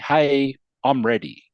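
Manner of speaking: ordinary talk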